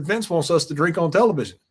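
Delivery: ordinary delivery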